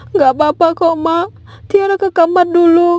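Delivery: tearful voice. Brushing off a parent's question about coming home crying: crying. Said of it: "Pulang-pulang kok nangis?".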